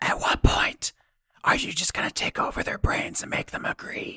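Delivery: breathy, quiet whisper. In a role-play, a character leans over to another to ask something, whispering. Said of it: "and just whispers".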